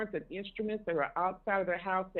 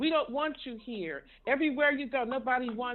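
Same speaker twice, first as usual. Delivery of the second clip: angry berating scolding, higher pitch; 5 semitones higher than usual. Retelling how a woman confronted a couple at a restaurant: imitating someone berating people. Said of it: "she kept on them".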